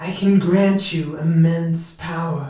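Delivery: hissing statue voice. A narrator reading a story voices the statue as it answers, hissing statue voice. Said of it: "The statue hissed".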